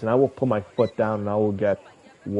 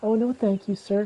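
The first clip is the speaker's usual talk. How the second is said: very high, sweet, nice, courteous, polite lady voice; 12 semitones higher than usual. Retelling how a nice lady turns down a scammer: imitating a nice, soft-sounding lady. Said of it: "just nice, soft sounding".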